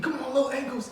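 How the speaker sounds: play-acted very high-pitched, fired-up screaming. Recalling his friend's dad, the basketball coach, screaming at him, retelling the coach's scream. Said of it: "he was screaming at me".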